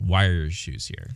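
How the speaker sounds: dry, needling, sarcastic tone. Retelling an argument, the speaker quotes the other person's question: mock-sarcastic question. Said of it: "you sarcastically asked".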